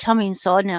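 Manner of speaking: usual speaking voice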